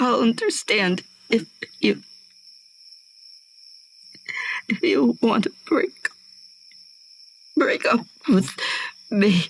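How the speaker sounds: high, tearful, crying stammer, stumbling over words. Speaking to their partner after a confession, crying.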